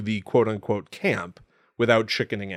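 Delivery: ordinary delivery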